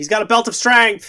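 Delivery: high-pitched yell. Recounting being in the crowd and calling out; retelling a yell from the crowd. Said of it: "I'm in the crowd and I yell out".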